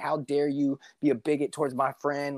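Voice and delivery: acted-out confrontational shout, kept small and held in. Retelling confronting a bouncer who insulted a friend: imitating own past yelling. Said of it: "I was yelling at him, screaming, like".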